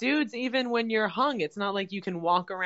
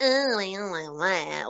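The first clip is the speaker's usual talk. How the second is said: put-on shallow, superficial woman's voice. Imitating superficial women turning a man down: mock superficial woman voice. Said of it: "I love this voice".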